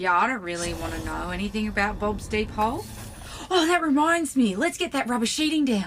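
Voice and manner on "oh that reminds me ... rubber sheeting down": delighted, bubbling with glee, raised and pitched up. A character in an audio drama suddenly changes the subject, gleeful.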